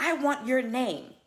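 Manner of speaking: put-on upset man's voice. Retelling a passenger's demand after asking him to move: imitating an upset passenger. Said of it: "And he really got upset".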